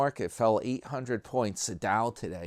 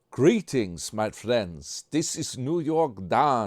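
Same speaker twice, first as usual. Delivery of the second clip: accent from Transylvania. Greeting viewers at the start in a put-on Transylvania accent. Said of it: "That's my Transylvania accent".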